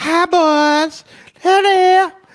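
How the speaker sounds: put-on Southern woman's accent. Retelling how Faye greeted the boys at the door, imitating Faye's Southern accent. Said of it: "and she's all southern".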